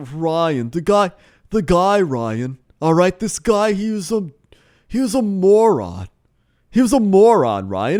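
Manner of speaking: slow, snooty rich-guy drawl, obnoxious. Recounting a man on the phone in the aisle behind, douchey rich guy voice. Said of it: "douchey rich person like talking tone".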